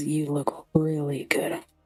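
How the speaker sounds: hushed whisper under breath. A character whispers toward another character, under his breath. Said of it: "he whispers under his breath".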